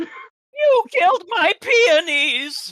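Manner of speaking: high mousy cartoon voice. Shouting at the players about killed flowers: Moose voice. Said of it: "you're trying to do a Moose voice".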